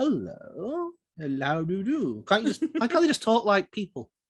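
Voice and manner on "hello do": mock arch affected voice, quieter. Mocking how genies and vampires are made to talk, mock arch voice. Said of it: "you have to talk like this".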